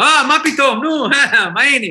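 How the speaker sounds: speaking with an Israeli accent. Explaining doing accents, showing how they greet Israelis in an Israeli accent. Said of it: "And I speak like they do".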